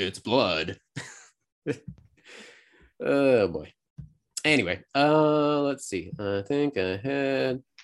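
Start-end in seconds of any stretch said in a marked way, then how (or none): 0.0-3.7 put-on horrible, stilted old video-game voice acting, awkward pauses. Showing a fan remake done in PS1 cutscene style, horrible PS1 cutscene voice acting. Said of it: "that horrible voice acting".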